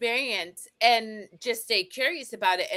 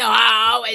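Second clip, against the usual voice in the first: put-on grouchy old man voice, louder; 8 dB louder than usual. Comparing the other speaker's sick voice to the Muppets balcony old guys voice. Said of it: "you guys know the Muppets and, like, the, the two old guys in the balcony?".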